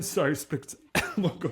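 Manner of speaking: high, choking, coughing splutter.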